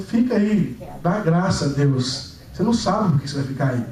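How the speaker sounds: plain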